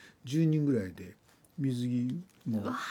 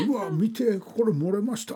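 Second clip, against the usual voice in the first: gleeful, carefree, loud, high, cheerful voice; 8 semitones higher, 6 dB louder than usual. Retelling a beach trip, the speaker quotes a grown man: imitating a loud, happy voice. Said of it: "何大声で楽しそうに言って".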